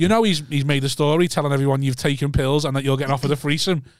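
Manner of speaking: usual speaking voice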